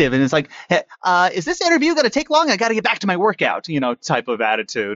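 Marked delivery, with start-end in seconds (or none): 0.7-3.7 very high, bouncy, hyperactive voice. Retelling the voice created for the pouch character: hyperactive Peter Pouch voice. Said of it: "very, like, hyperactive".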